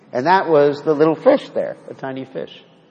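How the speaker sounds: usual speaking voice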